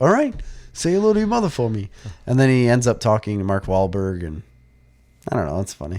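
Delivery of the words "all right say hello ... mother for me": very high, tossed-off delivery. Retelling how the sketch character greets everyone: Mark Wahlberg impression. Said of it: "Andy Samberg does Mark Wahlberg".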